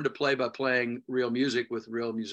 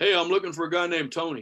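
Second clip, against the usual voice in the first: put-on Texas accent, pitched up; 5 semitones higher than usual. Retelling a guy coming to pick him up in Houston, in a put-on Texas accent. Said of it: "I'm using the accent because this is Houston, Texas".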